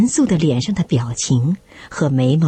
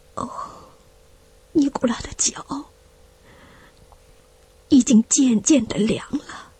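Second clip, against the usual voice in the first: quiet, hushed murmur under the breath, pitched up; 7 semitones higher, 4 dB quieter than usual. He speaks after Nikolai falls silent, in a hushed voice. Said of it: "他低声地说".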